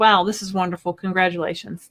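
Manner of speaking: usual speaking voice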